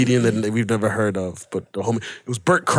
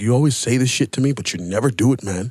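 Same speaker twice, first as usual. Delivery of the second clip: ordinary talk, nothing marked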